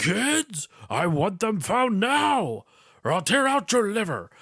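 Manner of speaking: put-on, comically over-the-top, high, drawn-out yelling. Retelling a movie scene on a cell phone: Snyder yelling. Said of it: "just yelling".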